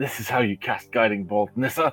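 muttering quietly under the breath, as an aside. Voicing a character casting a spell at another: muttering under breath. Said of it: "mutter under his breath".

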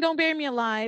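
high, small, held-back contained scream. Telling a story of a woman lowered into a grave, the speaker retells her scream. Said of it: "she's screaming".

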